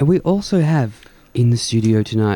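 put-on stage hypnotist voice and intonation. Radio host introducing tonight's studio guest, in a hypnotist voice. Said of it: "this is my hypnotist voice".

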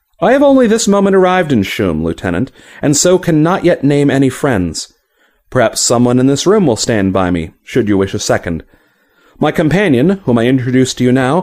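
ordinary delivery

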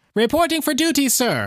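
very high-pitched robotic voice. Reading a robot's arrival line in Mech 3's high-pitched mechanical voice. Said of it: "said Mech 3 in his high-pitched mechanical voice".

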